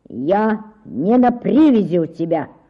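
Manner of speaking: snapping back. A man walking through a crowd answers a woman's accusation; snapped retort. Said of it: "огрызнулся Клистон".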